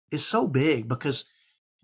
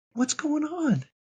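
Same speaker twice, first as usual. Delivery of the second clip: very high-pitched, tender, loving voice; 11 semitones higher than usual. Retelling how she would ask when he was furious, imitating her loving tone. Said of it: "she would say it so lovingly".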